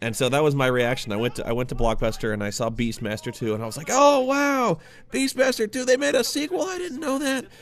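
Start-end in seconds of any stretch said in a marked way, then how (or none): 3.9-7.4 put-on very high, childish, gee-whiz little-kid voice. Recalling finding Beastmaster two at Blockbuster as a child, in a little kid voice. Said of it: "that's my little kid voice".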